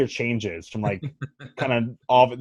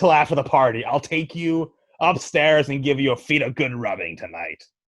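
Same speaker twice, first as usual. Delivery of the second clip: put-on goblin mistress character voice; 3 semitones higher than usual. The mistress speaks to the man she is seeing: Stelleto Goblin Rouge voice. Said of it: "[name]: Stelleto Goblin Rouge Lv 1 (The Mistress) / [name]: Stelleto Goblin Rouge Lv 1 (The Mistress) / [name]: Stelleto Goblin Rouge Lv 1 (The Mistress)".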